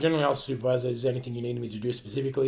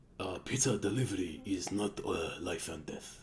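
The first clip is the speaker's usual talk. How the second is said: fake Japanese accent, very drawn out and slow; 4 semitones lower, 7 dB quieter than usual. Repeating a customer's words on request, in a put-on Japanese accent. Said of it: "I always put a Japanese voice on".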